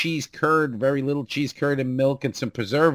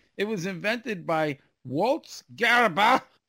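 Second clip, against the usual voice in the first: pitched-up, put-on German pronunciation of the name; 6 semitones higher than usual. Telling the others, saying the name as it must be said; mock german pronunciation. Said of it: "because you have to say it like that".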